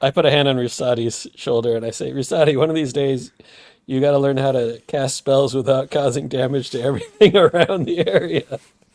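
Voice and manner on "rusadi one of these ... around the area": speaking while laughing, laughing through the words. Telling a battered companion in character to learn safer spells: laughing while talking. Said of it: "but I'm laughing as I say it".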